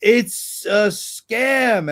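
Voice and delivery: high, urgent, insistent cry. Retelling a woman yelling at him during a call from an officer, retelling a yell. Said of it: "she's yelling at me".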